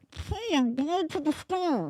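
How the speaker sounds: muffled, as if underwater or inside a closet. Saying a regular line when asked, sounding stuck in a closet. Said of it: "you're either underwater".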